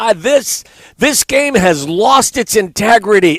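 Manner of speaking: mock high, drawn-out outraged scream at top volume. Retelling how a late father-in-law reacted to bad calls: imitating someone screaming in outrage. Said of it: "scream at the top of his lungs".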